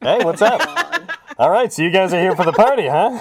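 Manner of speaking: vintage radio sound. Speaker imitates a character greeting party guests, old-radio sounding voice. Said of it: "just has like an old radio sound to his voice".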